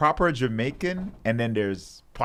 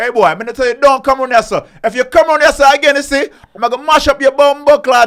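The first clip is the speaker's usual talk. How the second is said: put-on broad, thick Jamaican patois accent, very loud and high; 14 dB louder than usual. Demonstrating a less English-sounding Jamaican speaker, heavy Jamaican accent. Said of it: "And a darker Jamaican's like".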